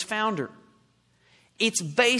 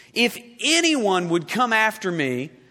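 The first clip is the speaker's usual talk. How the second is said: slow, with stress on anyone. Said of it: "underline the word anyone".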